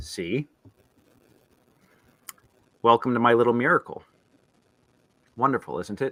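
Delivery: hushed, nasal tone. A scientist greets visitors over the speakers in a quiet, nasally voice. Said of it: "a quiet, nasally voice speaks out".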